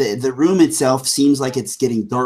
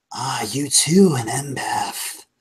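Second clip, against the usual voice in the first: rough, gristled, growly voice; 3 dB quieter than usual. Narrator voicing a voice in the corridor addressing an empath, gristled, growly voice. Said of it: "gristled and maybe growly".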